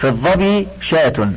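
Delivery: normal talking voice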